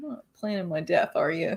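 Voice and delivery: soft, hushed stage half-whisper. Imagining the other speaker talking to their collectibles: imitating someone half-whispering. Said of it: "whispering that to your pops".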